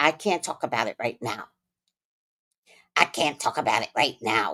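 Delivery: put-on very low, old, witchy granny voice. Mocking how Erica never talked about her situation: Erica's granny witchy voice. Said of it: "with her granny witchy voice".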